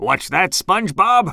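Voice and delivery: muttering, mumbling as if talking in sleep. A man dreaming in his hammock, muttering in sleep. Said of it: "He muttered".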